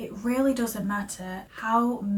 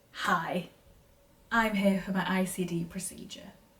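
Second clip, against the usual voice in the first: ordinary talk, nothing marked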